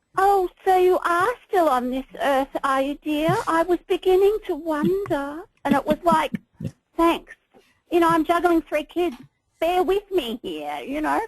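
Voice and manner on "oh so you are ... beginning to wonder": put-upon, long-suffering, martyred, guilt-tripping tone. Recalling how your mother spoke when you had no time to call, imitating mother's martyred voice. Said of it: "my mother used to do the martyred voice of".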